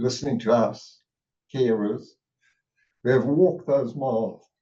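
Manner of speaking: moved, heartfelt, emotional voice with feeling welling up. A carer on a panel thanks professionals for listening, getting emotional. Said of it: "I'm getting all emotional now".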